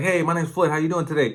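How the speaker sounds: very loud, rushed, overeager, way-too-much-energy voice. Showing how a phone greeting sounds to a caller with too much energy. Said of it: "this guy got too much energy".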